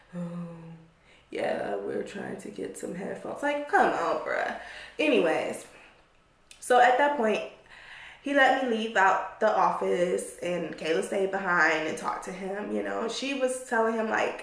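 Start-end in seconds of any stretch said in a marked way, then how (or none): 0.2-3.4 mocking, swooping, dim-witted fool voice. Retelling how a man at work talked: mocking a dim-sounding man. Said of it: "this fool talking like".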